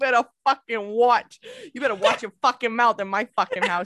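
a touch of put-on New Jersey accent. Imitating an angry father, put-on Jersey accent. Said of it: "That went Jersey a little bit".

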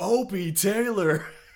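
loud yell. Quoting a movie line yelled at hecklers: imitating someone yelling at hecklers. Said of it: "he's yelling at the dudes who are heckling him".

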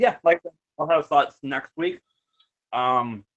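talking through a mouthful, chewing while speaking. Answering the other speaker, talking while eating. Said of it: "sorry, I'm eating".

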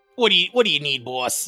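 imitated Boston accent. Voicing a little rock character with arms and legs, Boston accent. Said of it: "it talks like Boston".

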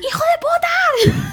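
put-on very high, shrill, loud yell, "de" drawn out. Recalling what they used to yell at the computer, retelling yelling at the computer. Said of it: "le gritaba al".

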